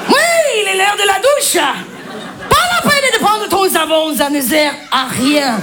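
barked in a mock German accent.

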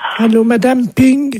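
high-pitched woman's voice. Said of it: "C'est ma femme".

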